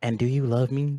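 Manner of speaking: strange, weird, airy, breathy delivery. Imagining a voice heard while lying in bed alone: weird breathy voice. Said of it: "Like in a weird, breathy fucking voice".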